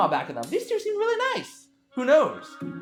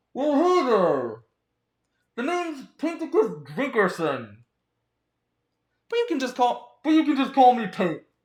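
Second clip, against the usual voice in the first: voice muffled as if through a fabric mask; 4 semitones higher than usual. Reading a game's dialogue aloud, voicing the masked character: muffled Pink voice. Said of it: "His voice is muffled slight-, see, I am doing it!".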